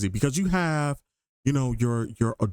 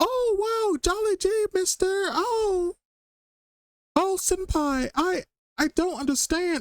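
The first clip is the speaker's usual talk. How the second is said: very high, very slow, drawn-out affected voice. Mocking how VTubers talk, imitating their high voice. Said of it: "they speak in a higher voice than they're meant to".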